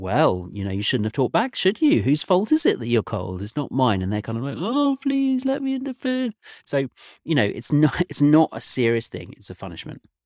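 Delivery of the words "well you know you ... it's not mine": acted, playful sing-song teasing, lighthearted. Acting out what you say to the ones you won't let in, retelling a lighthearted telling-off. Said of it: "I'm saying it in a lighthearted way".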